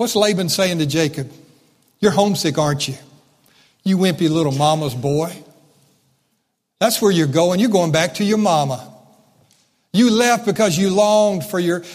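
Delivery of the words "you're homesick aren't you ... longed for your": mock sarcastic belittling taunting tone. Retelling what Laban said to Jacob, imitating sarcastic belittling. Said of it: "do you hear this sarcasm?".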